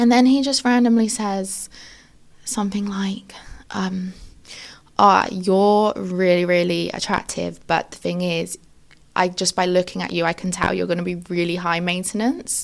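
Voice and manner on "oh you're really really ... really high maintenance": usual speaking voice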